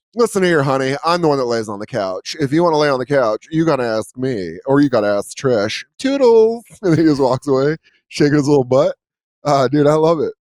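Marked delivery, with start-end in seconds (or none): 0.2-6.7 put-on campy, sassy, flamboyant old man voice.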